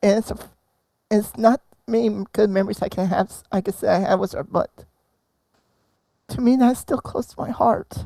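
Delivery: crying while talking. Sharing a treasured memory of a father after a loss: crying while talking. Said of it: "I'm sorry if I'm crying right now".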